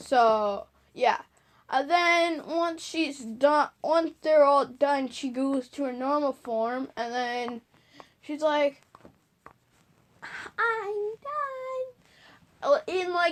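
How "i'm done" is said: put-on cutest, girliest, very high, sweet voice. Retelling a scene where a heroine finishes: imitating a girly, cute voice. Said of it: "in, like, the g-, girliest, cutest voice ever".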